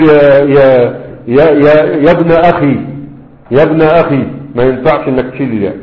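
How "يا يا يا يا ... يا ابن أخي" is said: ordinary talk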